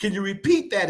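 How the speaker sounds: usual speaking voice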